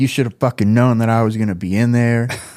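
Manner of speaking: mock angry, heated telling-off with a curse. Retelling climbing out of a trash can at a driver: imitating someone yelling. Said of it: "I'm yelling at him".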